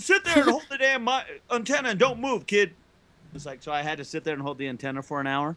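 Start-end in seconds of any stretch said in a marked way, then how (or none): 0.0-2.7 high, angry dad voice, yelling and ranting. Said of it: "And he goes".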